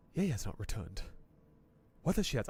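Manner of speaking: whispered, hushed, breathy high-priest character voice. Reading a found note aloud to folks, reading a note in a voice. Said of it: "I said I don't have it with the voice and then immediately started doing a voice".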